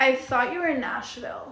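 put-on girlish voice of a young teen girl. Retelling how Mimi greeted them at the door: imitating Mimi's way of talking. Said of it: "she talks like that".

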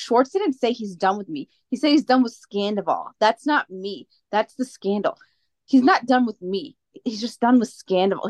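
normal talking voice

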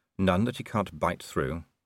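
plain reading voice

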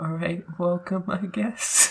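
soft, high, barely-there hushed voice. Mocking another speaker's podcast intro: imitating Kaden half-whispering. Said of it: "it was like somebody whispering".

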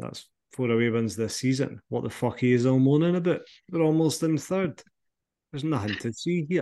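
smug, chipper, very pleased gloating voice. Retelling what Naismith said about four away wins: smug Stephen Naismith impression. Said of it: "he very smugly said".

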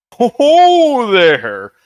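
very high, loud sing-song with stretched-out "ho". Voicing a hundred-foot giant at another player's suggestion: Santa voice. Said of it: "you could talk like Santa".

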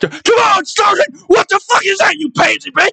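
put-on very high, yelling, screaming drill-sergeant rant. Retelling yelling at kids in drill sergeant mode: retelling drill-sergeant yelling. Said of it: "I'm just screaming and yelling at these fucking kids".

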